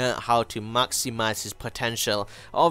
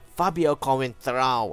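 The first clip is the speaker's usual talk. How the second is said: put-on Portuguese accent and pronunciation. Presenting a FIFA team pick, saying the new left back's name in a Portuguese accent. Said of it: "how I'm saying his name in a Portuguese accent".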